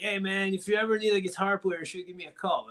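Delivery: put-on acted drunk voice. Recalling approaching Zach backstage after a show: acting out drunk self. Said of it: "I was super drunk".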